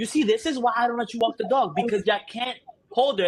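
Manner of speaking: yelling. Retelling scolding Seth after the dog pulled him over, retelling a yell. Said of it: "Now I'm yelling in the neighborhood".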